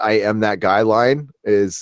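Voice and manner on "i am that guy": ordinary delivery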